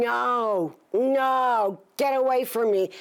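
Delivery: mock, high, very slow, stretched-out hollering. Retelling the moment something came at the car: reenacting hollering. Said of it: "I was hollering".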